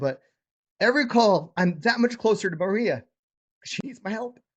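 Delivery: high, moved, heartfelt, emotional, earnest voice. Speaking about his calls, getting emotional. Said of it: "I'm getting emotional".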